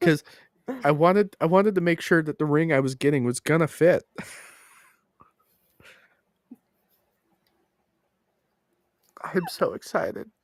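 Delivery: crying while talking. Talking about a ring that came in the mail, crying while talking. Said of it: "Are you crying?".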